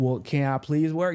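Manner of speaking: mock-polite, pleading tone. Retelling what the speaker said to a screaming man, acting out a polite plea. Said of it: "Now I'm requesting".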